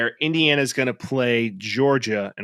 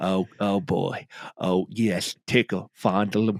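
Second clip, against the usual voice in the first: put-on old coach voice, lower pitch; 5 semitones lower, 4 dB quieter than usual. Doing a joke impression of sex sounds: Lou Holtz voice. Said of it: "Lou Holtz, like, sex sounds".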